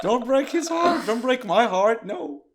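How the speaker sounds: high, loud, desperate, tearful voice. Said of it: "You're like".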